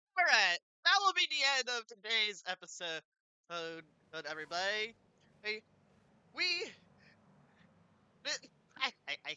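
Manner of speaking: giggles breaking up stammered words. Wrapping up the episode for everybody, laughing while talking. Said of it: "I can't stop laughing".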